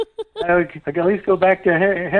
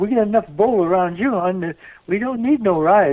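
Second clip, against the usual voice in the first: attempted Southern accent. Joking back at the other speaker about a bull ride, in a Southern accent. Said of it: "That's my best Southern accent".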